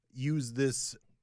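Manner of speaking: ordinary talk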